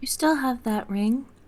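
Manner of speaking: conspiratorial whisper. Coming up behind another character at a party, asking about a ring: conspiratorial whisper. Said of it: "just kinda conspiratorially whisper".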